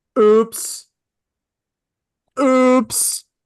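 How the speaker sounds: high, obnoxious, snooty mock tone. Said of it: "Freaking so obnoxious, that oops".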